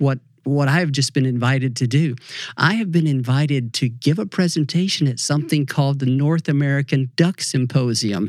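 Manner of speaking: usual speaking voice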